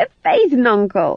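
high-pitched, squeaky voice squeaking out the words. The fool answers the cook's questions, in a squeaky voice. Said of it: "he squeaked".

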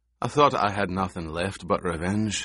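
plain

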